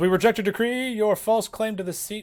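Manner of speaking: high, loud, defiant shout. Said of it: "The accuser yells".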